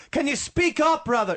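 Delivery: put-on very high-pitched shouting. Retelling a friend's phone call, imitating a shout. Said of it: "he's, like, shouting at me".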